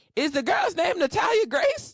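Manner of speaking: high, loud, shocked shout. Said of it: "I was like".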